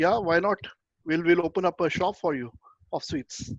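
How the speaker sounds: normal talking voice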